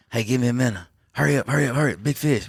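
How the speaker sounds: hurried put-on yell.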